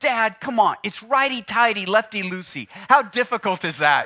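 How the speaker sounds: scornful, disdainful, talking-down retort. Retelling what the young son said about fixing cars: imitating son's disdainful tone. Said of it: "just the disdain in his voice".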